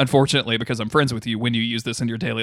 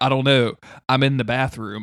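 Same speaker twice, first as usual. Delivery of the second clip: normal talking voice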